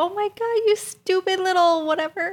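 very high, sugary, sweet pet-talk voice. Showing how you talk to your dog or cat, saying an insult nicely. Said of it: "if you say it nicely".

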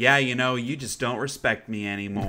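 ordinary delivery

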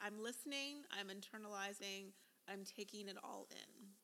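ordinary delivery

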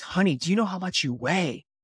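put-on whispered voice. Retelling what mom whispered at the hospital bed: imitating a whisper. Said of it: "comes up to me and whispers".

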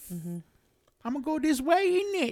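horrible fake British accent, very high-pitched. Talking about Siri's voices, the speaker tries out a bad British accent. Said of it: "I can work on my accent".

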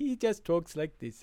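dopey woodsman in an odd voice.

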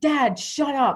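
play-acted, high-pitched screaming outburst. Retelling learning of a brother's death from their father, retelling a scream. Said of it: "I start screaming".

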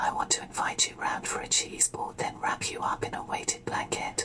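whispering suggestively. Showing how whisper mode makes innocent statements sound suggestive: suggestive whisper. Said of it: "make the most innocent statements sound very suggestive, uh, just like this".

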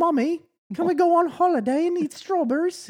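squeaky, pitched-way-up cartoon piglet voice. Quoting an old cartoon line, in a Peppa Pig voice. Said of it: "The old Peppa Pig here".

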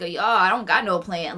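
laughing while speaking. Retelling a man's reply to people talking to him on camera, imitating him laughing.

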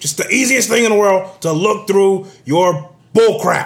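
full-on, shrill, loud screaming rant. Ranting directly at Hillary, screaming. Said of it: "Excuse me for screaming".

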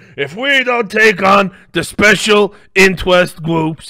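very loud, slow, belted delivery. Mocking how a candidate answered every debate question: Bernie Sanders voice. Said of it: "I don't know why I'm combining his voice".

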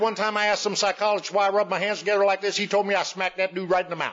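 put-on high, rapid-fire patter in a Texan accent. Recalling Jim, a man from Texas who passed away; imitating Jim's rapid-fire talk. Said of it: "He was just rapid fire".

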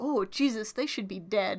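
ordinary talk

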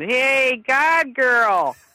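put-on Chicago accent, yelled. Across a bar, a tall guy yells to the speaker: Bill Zamy's flat Chicago yell. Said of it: "yelled in his flat Chicago accent".

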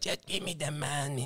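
hushed, very quiet, put-on South African gangster accent. Describing south african gangsters, quoting one of them: imitating a south african accent. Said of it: "Is that a South African accent?".

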